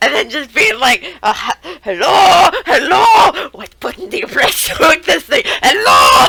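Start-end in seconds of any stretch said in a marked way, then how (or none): 1.8-6.3 raised, swooping, high sing-song voice. Retelling a cartoon gag of Splinter answering a phone: Splinter voice. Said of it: "Splinter trying to answer it".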